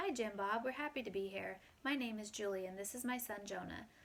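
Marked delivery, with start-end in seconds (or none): none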